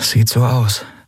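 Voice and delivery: murmured, low voice. Narrator reads one character answering another's question: murmured. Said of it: "murmelte Andriel".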